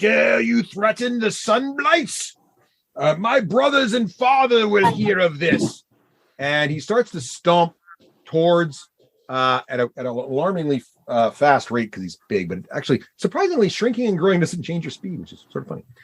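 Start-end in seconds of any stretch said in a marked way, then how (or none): 0.0-5.8 halting, broken-Common shout in a giant voice. Voicing a giant who yells at the party: yelling in broken Common. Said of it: "he yells, uh, in broken sort of common".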